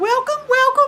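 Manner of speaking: very high, loud voice. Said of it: "No, not that".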